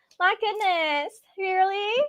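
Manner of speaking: high, prissy put-on Valley Girl voice. Describing how she went straight Valley Girl: prissy Valley Girl voice. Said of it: "Like just very like prissy".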